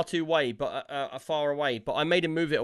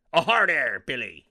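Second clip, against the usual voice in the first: loud, full-on pirate voice; 5 dB louder than usual. Describing Speak Like a Pirate Day at offices, the speaker shows a pirate voice. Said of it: "everybody has to talk in a pirate voice".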